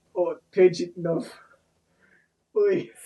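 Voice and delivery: put-on Russian man's accent. Making up a disguise that sounds like a Russian guy: put-on Russian accent. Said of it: "a Russian guy who's like".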